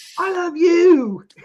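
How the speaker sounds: put-on very high-pitched, loud, called-out Irish accent. Retelling what a wrestler said back to a fan: imitating Becky Lynch's Irish accent. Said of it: "in her accent".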